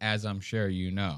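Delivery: put-on smug, smirking voice. Imitating how a speaker in an interview says a line: imitating Trump smirking. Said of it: "says it with this smirk in his face".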